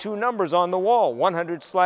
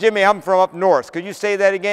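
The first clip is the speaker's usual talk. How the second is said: ordinary talk, nothing marked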